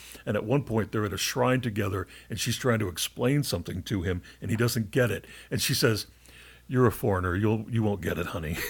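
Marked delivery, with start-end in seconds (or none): 6.7-8.6 put-on tender, matter-of-fact, gentle plain delivery. Retelling what a woman said to a former soldier at a shrine, imitating a tender, matter-of-fact tone. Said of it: "she says it very tenderly, but very matter-of-factly".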